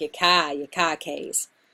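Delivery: put-on Boston accent. Speaker explaining dialect in poems, demonstrating the sound: Boston accent. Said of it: "trying to get that like Boston accent".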